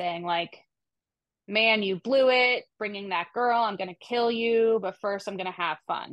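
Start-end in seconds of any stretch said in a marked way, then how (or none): 1.5-6.1 mock yelling, put-on angry shouting. Retelling how an attacker yelled at bound victims, retelling a yelled threat. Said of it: "Curl started yelling at them".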